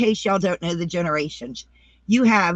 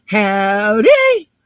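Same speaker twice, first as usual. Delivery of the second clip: hollered, loud, long drawn-out "howdy"; 3 semitones higher, 9 dB louder than usual. Showing how to say howdy like Granny D: imitating Granny D's howdy. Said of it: "You gotta do it like Granny D".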